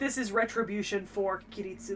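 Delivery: normal talking voice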